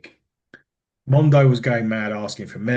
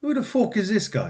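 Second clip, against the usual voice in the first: put-on higher-pitched Irish accent, fired off quickly. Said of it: "You sounded Irish there".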